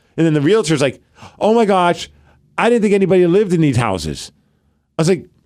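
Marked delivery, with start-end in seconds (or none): none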